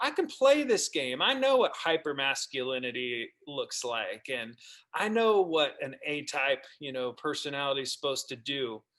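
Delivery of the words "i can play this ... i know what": usual speaking voice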